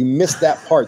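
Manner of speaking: ordinary talk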